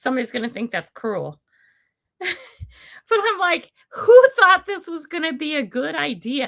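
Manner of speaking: talking through bursts of laughter, high and swooping. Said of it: "I know I'm laughing".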